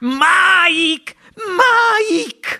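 very high, screeching shriek. Narrator reads a mother crying out for her vanished son, shrieking. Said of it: "strillò la signora TV mettendosi le mani nei capelli".

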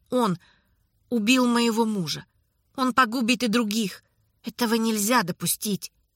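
plain reading voice

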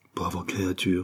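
soft murmur. Narrator voicing Ruff: murmured. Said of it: "murmura Ruff".

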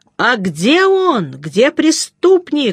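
high shout with each word stretched out. An old worker raises his fists over his head and shouts at the narrator. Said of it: "поднял над головой кулаки и закричал".

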